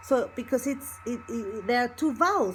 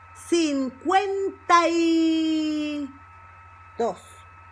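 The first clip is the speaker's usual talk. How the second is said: slow cincuenta, stress on second syllable cuen. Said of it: "you have the emphasis in the second syllable".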